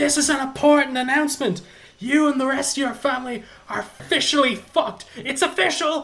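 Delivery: very high-pitched screamed delivery. Describing a character's scenes, retelling him screaming. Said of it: "holding a flaming crossbow on a balcony and screaming".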